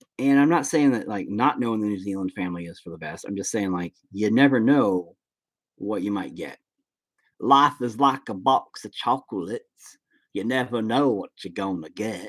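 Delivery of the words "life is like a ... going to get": bad, slow delivery, each word drawn out. Talking about family, dropping in a famous line: Forrest Gump impression. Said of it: "that was my best impression of, of Forrest Gump".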